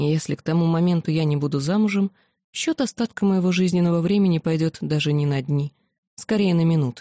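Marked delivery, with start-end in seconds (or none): none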